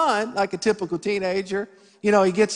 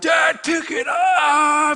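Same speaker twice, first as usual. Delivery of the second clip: very slow, high, drawn-out yell rising upward; 7 semitones higher than usual. Retelling his son yelling at him over a stuck four-wheeler, imitating son yelling. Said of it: "my son's yelling".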